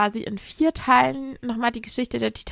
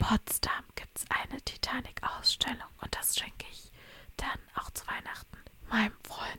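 hushed, very soft secretive whisper; 14 dB quieter than usual. Speaker revealing a Christmas present for a friend who listens to the show: whispering. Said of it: "jetzt muss ich flüstern".

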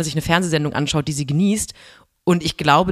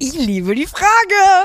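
very high, very slow, thrilled, gushing exclamation; 14 semitones higher, 5 dB louder than usual. Reacting to a question just put to them, excited. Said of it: "ich bin so aufgeregt".

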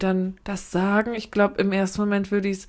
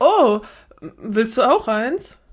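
loud, startled, spontaneous little outburst; 2 semitones higher, 5 dB louder than usual. Acting out offering gum when eyes meet: acting startled, spontaneous. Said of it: "dann so erschrocken, wenn der Blick sich trifft".

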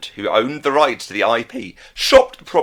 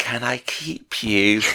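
whisper, much slower; 5 dB quieter than usual. Retelling a ghost's line to a girl falling asleep, Casper's line, whispered. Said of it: "He whispers it".

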